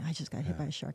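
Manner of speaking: whispering. Retelling quietly telling a husband about a shark hit: imitating own past whisper. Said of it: "I whispered".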